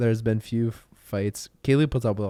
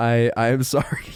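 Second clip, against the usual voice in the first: laughing through the words. Retelling an apology to a partner: laughing through a repeated apology. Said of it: "I tried so hard to say it without laughing".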